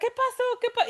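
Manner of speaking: very high, alarmed cry. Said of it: "todos se empiezan a alterar".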